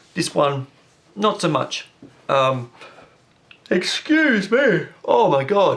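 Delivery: words stretched by a yawn. Talking through an iOS update in a video, yawning. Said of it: "Sorry for yawning in the video".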